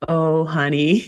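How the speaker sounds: tender, soothing, kindest gentle voice. Retelling a scene, imitating Watson's kindest voice. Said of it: "in his kindest voice possible here".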